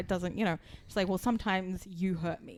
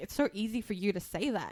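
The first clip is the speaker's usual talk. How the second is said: put-on, irritated, fed-up, angry tone. Retelling a scene where she gets pissed off at him: imitating her angry retort. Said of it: "she gets really, like, pissed off".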